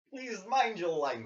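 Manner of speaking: put-on big, jolly Russian accent. Describing a movie character, then quoting him: Colossus jolly Russian accent. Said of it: "Jolly Russian".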